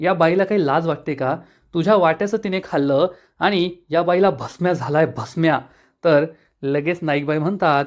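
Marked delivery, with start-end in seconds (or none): none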